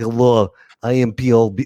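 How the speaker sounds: put-on Russian accent, dance DJ voice. Teasing another speaker who just promoted himself, russian dance dj voice. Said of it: "like a Russian dance DJ".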